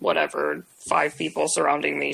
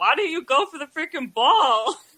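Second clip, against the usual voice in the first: mock yelling, high and pitched-up; 10 semitones higher, 3 dB louder than usual. Speaker retelling what they yelled at him, retelling a yell. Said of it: "I yelled at him".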